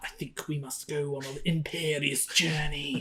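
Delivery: breathy near-whisper, very quiet, low voice. Imitating an actor's film accent for a co-host, a breathy, quiet imitation. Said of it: "It's so breathy and quiet constantly".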